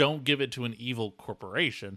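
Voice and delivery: ordinary delivery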